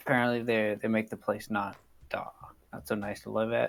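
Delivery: conspiratorial, confiding, low-toned voice. Voicing a character who leans in so passersby won't hear: low hushed tone. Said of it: "says this in a low enough tone so anyone wandering by won't".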